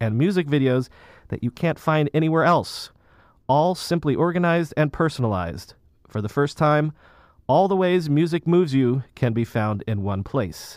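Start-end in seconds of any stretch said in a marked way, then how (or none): none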